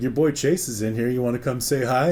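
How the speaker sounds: ordinary talk, nothing marked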